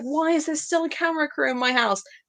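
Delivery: fed-up, sick-of-it tone. Retelling a complaint about a camera crew: imitating someone fed up. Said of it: "he was so over it".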